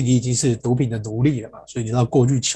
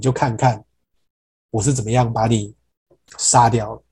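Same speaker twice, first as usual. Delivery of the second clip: plain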